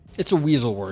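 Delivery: plain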